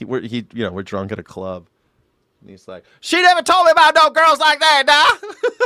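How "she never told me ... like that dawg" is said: put-on very high, very loud, shrill South Carolina accent. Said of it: "He always talks so funny".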